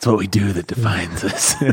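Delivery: breathless acted superhero voice. Asked how he talked to his wife when wooing her, he demonstrates: out-of-breath Batman voice. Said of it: "out of breath Batman".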